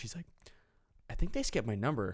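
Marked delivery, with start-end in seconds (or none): 1.1-2.1 soft, hushed half-whisper under the breath. Retelling how a woman waiting for her number half-whispered to people beside her: imitating someone half-whispering. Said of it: "whispering to the people next to her".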